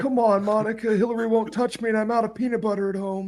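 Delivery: raspy voice pitched way up. Joking about the scandal, speaker voices the president talking to the intern: Bill Clinton impression. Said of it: "my Bill Clinton impression".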